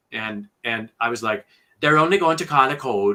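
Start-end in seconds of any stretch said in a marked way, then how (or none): 1.8-3.1 poor, loud, put-on Jamaican accent. Repeating a Jamaican nurse character's line, in a bad Jamaican accent. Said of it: "it was just really bad".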